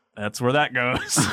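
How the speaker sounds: put-on voice, totally grave and self-serious. Recalling him plopping a tree on a New York street, in Adam Driver voice. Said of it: "in that Adam Driver voice of like".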